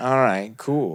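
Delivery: dry, cynical-sounding, sarcastic brush-off tone. Repeating own earlier remark about low subscriber count: repeating own sarcastic remark. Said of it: "that kind of sarcastic".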